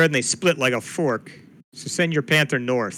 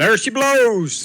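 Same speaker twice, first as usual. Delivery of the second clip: loud, high-pitched shouted yell; 8 semitones higher, 5 dB louder than usual. A tabletop player reacts as a creature pops out of the sand, yelling out. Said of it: "I'll yell out".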